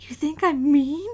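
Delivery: whispered in a character voice. Voicing a character who quietly asks Saya a question: whispering in character. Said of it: "I kinda whisper to Saya".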